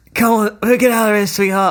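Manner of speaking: put-on light touch of Irish-American accent. Retelling a line from a film scene: slightly Irish-American Pierce Brosnan voice. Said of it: "in his kind of slightly Irish-American voice".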